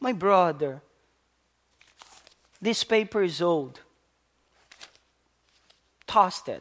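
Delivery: play-acted gentle, soft, kind voice. Retelling how they spoke to their brother about old paper, acting out a kind voice. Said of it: "With a voice that it's kind".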